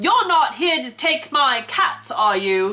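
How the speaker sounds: put-on cross British accent. Retelling a woman feeding cats who got mad at the speaker: put-on angry British lady accent. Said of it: "I'll just try my best accent".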